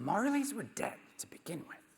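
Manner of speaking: high puppet-style voice. Quoting the same line again as Gonzo: Gonzo impression. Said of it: "he says it like this".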